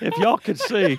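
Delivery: loud, high teasing call-out.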